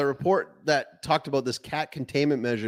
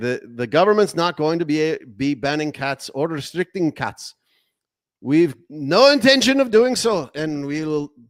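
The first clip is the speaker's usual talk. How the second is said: bad put-on accent slipping into Indian; 5 dB louder than usual. Quoting what he said on Monday, the speaker's bad accent slips toward Indian. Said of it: "I'm starting to sound like an Indian".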